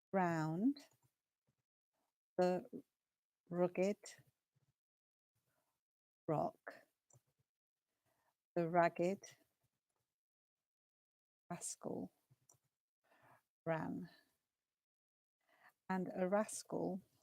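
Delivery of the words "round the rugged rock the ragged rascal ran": slow, careful delivery, every word placed. Leading a tongue twister for listeners to copy, saying it nice and slowly. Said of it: "I'm going to say it nice and slowly".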